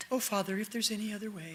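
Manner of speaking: hushed, reverent tone. Showing how not to imagine Jesus praying, Jesus in a soft, sweet holy voice. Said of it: "holy, soft, sweet little voice".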